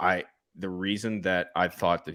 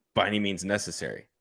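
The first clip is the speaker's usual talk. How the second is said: ordinary talk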